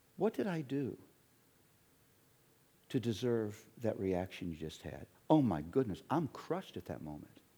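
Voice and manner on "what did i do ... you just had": play-acted, very sweet voice. Retelling a question after a sharp reply: imitating Luella asking sweetly. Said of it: "She said it very sweetly".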